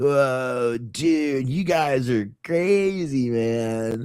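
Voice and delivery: put-on very slow, high stoner drawl, stretched out. Describing an actor's stoner employee character, doing a Jeff Spicoli stoner voice. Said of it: "The eccentric, weirdo, stoner employee".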